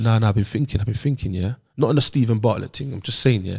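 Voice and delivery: very low, deep put-on voice. Acting out Travis calling another speaker over, imitating Travis's voice. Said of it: "It's the voice".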